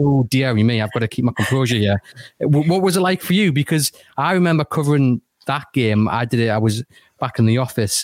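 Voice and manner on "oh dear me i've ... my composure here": ordinary delivery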